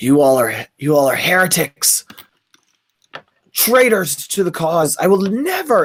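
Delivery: rough, gravelly reptilian turtle character voice. Game narrator voicing a turtle character who turns to Dell, gravelly turtle voice. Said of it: "in his gr- gravelly turtle voice goes".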